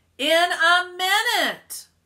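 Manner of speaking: shrill, high, very loud booming bellow. Narrator reads Arthur answering Stacy right into the narrator's ear, booming. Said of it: "Arthur boomed right into my ear".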